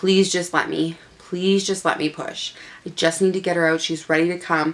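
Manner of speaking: tearful, weeping, crying, begging tone. Retelling begging to be allowed to push during labor: retelling a crying plea. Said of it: "So I'm crying, like, crying".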